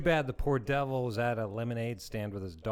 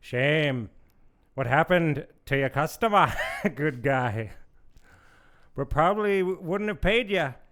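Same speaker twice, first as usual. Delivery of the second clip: put-on slick, oily, smarmy Irish accent, high and raised; 6 semitones higher, 7 dB louder than usual. Reading a story aloud, a mafia kingpin speaking to a boy: oily Irish voice. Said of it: "In his most oily Irish voice".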